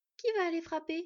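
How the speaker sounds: shy, timid, small high voice. Skad puts a question to the companions, timidly. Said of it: "émit timidement Skad".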